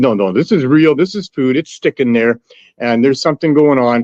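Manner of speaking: ordinary delivery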